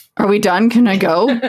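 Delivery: ordinary delivery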